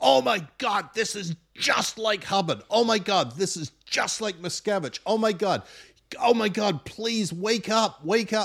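put-on shrill, very high shouting exclamations. Retelling watching The Vow with Christy: imitating shouting at the TV. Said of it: "I shout at the T V".

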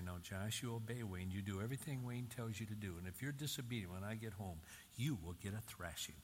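ordinary delivery

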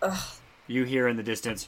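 ordinary delivery

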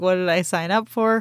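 plain

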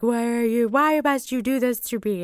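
put-on yelling and crying. Retelling yelling and crying at a husband who didn't put up the dishes. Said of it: "I'm just like yelling and crying at him".

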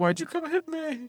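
very high, sad, hurt whimpering. Watching Star Trek, a viewer voices a crying figure who was punched; imitating a sad crying figure. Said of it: "he's so sad".

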